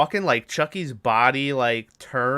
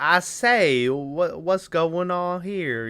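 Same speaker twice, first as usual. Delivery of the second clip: very slow, drawn-out southern gentleman drawl; 4 semitones higher than usual. Recapping a scene, the speaker imitates the colonel interrupting, Colonel Cochran's southern gentleman voice. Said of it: "kind of a southern gentleman".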